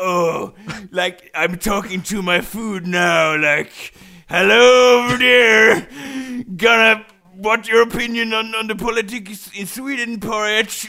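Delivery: high-pitched, loud, chatty voice. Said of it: "So it's like".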